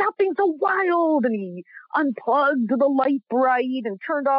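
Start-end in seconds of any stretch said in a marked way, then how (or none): 0.0-1.2 put-on yelling, higher. Retelling how dad came downstairs after a long shift: imitating dad yelling. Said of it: "He just came downstairs and yelled at us".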